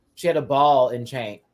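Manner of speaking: ordinary delivery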